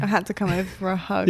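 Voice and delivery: plain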